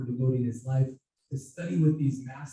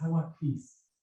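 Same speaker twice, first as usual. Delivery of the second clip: imitated clear girl's voice; 2 semitones higher than usual. Retelling how the girl answered when called by name: imitating a clear girl's voice. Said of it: "this clear girl's voice says".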